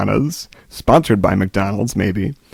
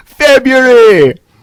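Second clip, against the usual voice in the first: very high, very loud Jamaican accent; 9 dB louder than usual. Imagining a show's catchphrase answer to a favorite-month question: Jamaican accent. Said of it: "February is my favorite word to say uh, in a Jamaican accent".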